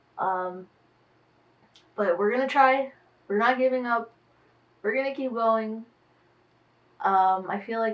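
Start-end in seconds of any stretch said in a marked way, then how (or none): 2.0-5.9 loud, high, energetic voice. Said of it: "I have a lot of energy in my voice".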